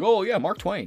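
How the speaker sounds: very high-pitched, squeezed-up voice. Retelling how the president would talk about a banned author: imitating the president. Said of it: "have him be like".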